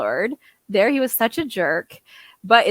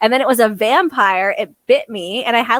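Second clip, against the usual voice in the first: ordinary delivery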